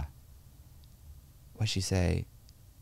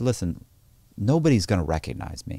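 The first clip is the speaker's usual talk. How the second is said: plain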